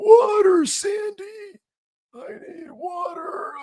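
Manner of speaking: high, drawn-out, parched-sounding cartoon voice. Mocking how Marab sounds, asking Sandy for water in a dehydrated SpongeBob voice. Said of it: "sound like a dehydrated SpongeBob".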